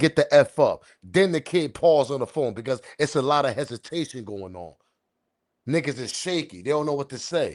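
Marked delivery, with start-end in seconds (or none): 0.0-0.8 mock scream, louder and slower. Speaker retells a phone call where somebody screamed, imitating someone screaming. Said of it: "Somebody screaming saying".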